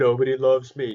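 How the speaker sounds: high, loud, acted sobbing crying voice. Speaker imagines the listener's dog alone among its treats, mock crying as the dog. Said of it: "She's just crying".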